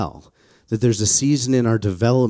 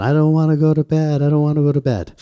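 put-on, full-lunged, high-pitched child's tantrum scream; 6 semitones higher, 4 dB louder than usual. Retelling a child's bedtime tantrum: imitating a child screaming. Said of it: "starts screaming at the top of her lungs".

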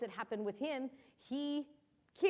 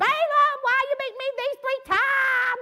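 shrill, booming, high put-on southern country accent; 12 dB louder than usual. Retelling the Bible story of the donkey speaking to Balaam, southern country accent. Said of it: "Like a country accent, you know, southern accent".

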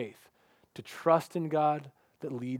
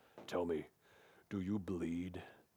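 very low, hushed, barely audible electronic growl; 9 semitones lower, 11 dB quieter than usual. Speaker quotes a movie trailer line in Batman's deep electronified voice. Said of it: "in that deep electronified voice".

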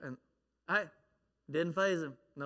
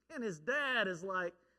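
usual speaking voice

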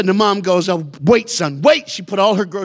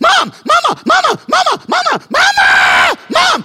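frantic, very high, very slow, stretched-out calling; 6 dB louder than usual. Retelling a boy calling his mother in a checkout line: imitating a kid going nuclear. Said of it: "He went nuclear".

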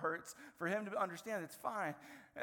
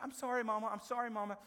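mock-sweet, put-on sweet voice; 2 semitones higher than usual. Retelling how he kept apologizing to his mama, imitating his sweet apology. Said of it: "he turns from sweet".

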